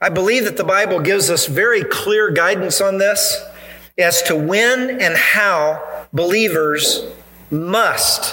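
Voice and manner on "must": must stressed and drawn out after a pause. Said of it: "let me emphasize that word".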